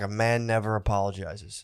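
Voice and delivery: play-acted, utterly dead serious, low and slow. Quoting a guy from work: imitating someone dead serious. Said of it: "he was dead serious".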